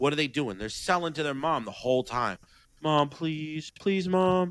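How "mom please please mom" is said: put-on high, drawn-out, begging toddler voice. Acting out a two-year-old asking mom for a candy bar, imitating a begging child. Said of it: "a two year old wants a candy bar".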